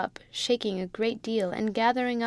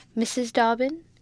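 ordinary delivery, nothing marked

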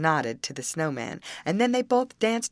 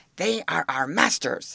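ordinary delivery

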